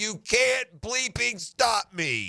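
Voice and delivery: slow, high, drawn-out taunting scream. Retelling a playoff step-back three, imitating Luka screaming: imitating Luka screaming. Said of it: "You screaming in his face as loud as he can".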